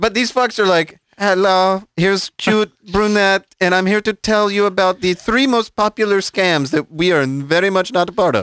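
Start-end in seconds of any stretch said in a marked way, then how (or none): 1.2-8.4 put-on Slavic accent straining for an American accent. Acting out a scammer introducing herself, speak in a Slavic accent trying to be American. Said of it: "with a Slavic accent that's suspiciously trying to be American".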